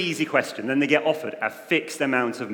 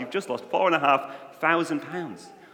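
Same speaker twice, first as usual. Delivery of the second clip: normal talking voice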